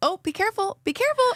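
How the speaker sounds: sweet, very high-pitched voice. Retelling how Ellie warned the speaker while moving the tethering setup, imitating Ellie's sweet voice. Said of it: "she was saying it in such a sweet voice".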